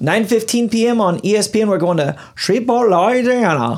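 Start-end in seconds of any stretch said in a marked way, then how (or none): 1.7-3.8 Louisiana accent impression. Announcing a game on ESPN with co-hosts, in a Louisiana accent. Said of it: "That was my Louisiana accent".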